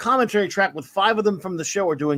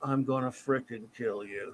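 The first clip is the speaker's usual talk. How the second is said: very low, hushed, deep, flat monotone drone; 7 semitones lower, 11 dB quieter than usual. Retelling a phone call from a buddy, in the buddy's monotone voice. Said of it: "he's got this like monotone voice".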